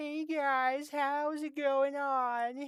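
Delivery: very high-pitched, loud cartoon voice, words drawn out. Retelling an introduction done as a joke in a Carl Wheezer voice. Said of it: "sound like Carl Wheezer from Jimmy Neutron".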